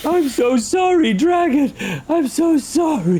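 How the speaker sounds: devastated, deeply upset. Role-playing someone who has hurt a dragon, apologizing to it, devastated apology. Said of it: "I am devastated".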